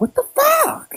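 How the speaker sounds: very high-pitched shocked cry in highest register. Retelling her reaction when she heard what the other woman studied, very high-pitched voice. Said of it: "I literally said it in the most high pitched voice".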